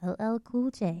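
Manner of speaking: phone voice-assistant announcement voice. Answering who they love, the speaker repeats the name in a Siri voice. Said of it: "in my Siri voice".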